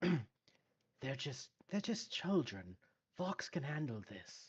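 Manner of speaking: quiet whispered voice. Whispering aside to Gaspar about the children. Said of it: "I'm going to whisper to Gaspar".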